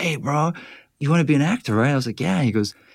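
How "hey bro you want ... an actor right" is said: laid-back surfer dude voice. Retelling what a line producer said to him, in a surfer dude voice. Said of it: "the surfer dude".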